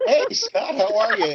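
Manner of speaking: high-pitched cartoon duck voice. Co-host greets the host right after the show introduction: Howard the Duck voice. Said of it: "that's my Howard the Duck impersonation".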